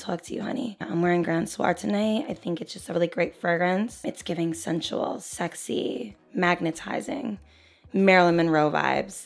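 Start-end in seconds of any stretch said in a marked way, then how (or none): 0.4-2.3 voice brought down. Describing a deep, sultry fragrance as if wearing it tonight: lowered voice. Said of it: "let me bring my voice down a little bit".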